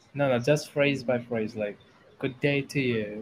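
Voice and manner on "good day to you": normal talking voice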